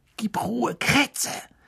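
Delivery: very high, sharp hissing voice. Ron speaks to the rat in his breast pocket: hissed. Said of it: "zischte Ron".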